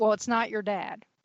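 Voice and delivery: acted sarcastic delivery. Retelling a reply to a daughter about a found body: imitating own sarcastic remark. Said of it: "being sarcastic".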